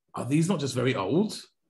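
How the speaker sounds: normal talking voice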